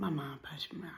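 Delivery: soft, hushed, confiding whisper.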